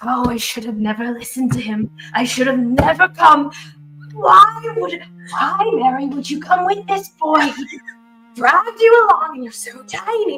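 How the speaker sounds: put-on muttering, grumbling old woman voice under breath. Voicing a small old halfling muttering to herself: muttering voice. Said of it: "this muttering voice".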